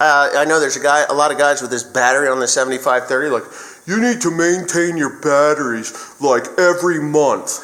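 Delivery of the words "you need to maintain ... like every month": dopey, dimwitted cartoon voice. Explaining battery upkeep, mocking what some guys say; Homer Simpson voice. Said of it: "I'm using that voice of Homer Simpson".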